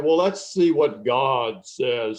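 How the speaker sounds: put-on booming voice. Retelling what a big man would say after the Bible drill, imitating a booming voice. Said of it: "he had a booming voice".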